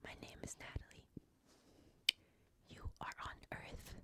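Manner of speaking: very soft, hushed whisper. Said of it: "I'm gonna now whisper near the creature's ears".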